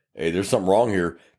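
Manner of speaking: ordinary talk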